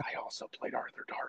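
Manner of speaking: close, hushed whisper, as if right at the ear. Recalling a theater encounter, the speaker repeats what a man whispered: retold whisper. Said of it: "he whispered in my ear".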